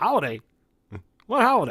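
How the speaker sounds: put-on loud, swooping American southern accent. Quoting what a man said back to the speaker, in a southern accent. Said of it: "It was a southern accent".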